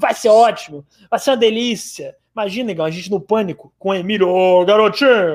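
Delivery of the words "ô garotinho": put-on sleazy, dirty-old-uncle tone, radio host style. Imagining an interview on Pânico, imitating Emílio: Emílio Surita impression. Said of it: "eu tô tentando imitar ele".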